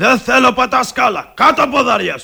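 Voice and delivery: very loud, high, raspy yelling. In a quarrel after turning down an offered drink, shouting. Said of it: "Γιατί φωνάζεις".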